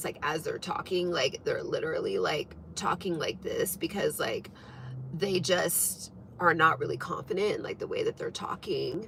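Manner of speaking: creaky voice. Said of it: "where people start to talk like this".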